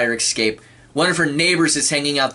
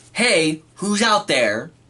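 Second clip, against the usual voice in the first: acting out a scream, called out loudly; 4 semitones higher than usual. Acting out calling through a door at someone banging: acting out a scream. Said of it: "and I'm screaming".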